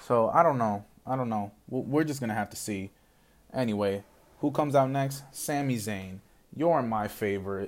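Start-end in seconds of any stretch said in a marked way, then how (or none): 6.5-7.7 dry, insincere, sarcastic mock tone. Reacting to a wrestler coming out during a match recap: sarcastic. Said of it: "Being sarcastic here".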